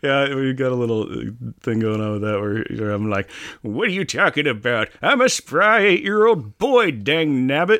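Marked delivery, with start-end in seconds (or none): 3.6-7.8 put-on elderly man voice, a bit high. Retelling a past exchange in character as Jack: Jack old man voice. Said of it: "his Jack old man voice".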